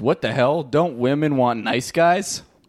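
ordinary delivery

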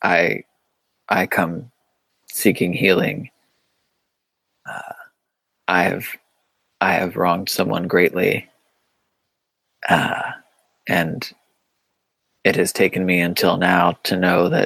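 hushed, whispered voice. Role-playing a character who comes forward seeking healing, in a whisper. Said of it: "And in like a whisper say like".

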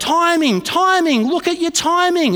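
mock, shrill, high-pitched yelling coach voice. Retelling a swimming coach's instructions during a lesson: imitating someone yelling. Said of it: "he's yelling at me".

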